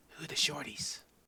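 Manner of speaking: hushed, quiet, breathy whisper. Game master voices a woman asking the innkeeper about the group: Zara whispering. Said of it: "she kind of whispers to the innkeeper".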